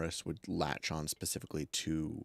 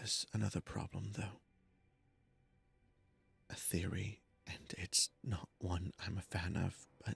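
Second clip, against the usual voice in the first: hushed, lowered voice; 2 semitones higher, 6 dB quieter than usual. Player voicing her character, making sure nobody else hears: in a lower voice. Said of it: "in a lower voice".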